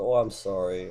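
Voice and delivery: ordinary delivery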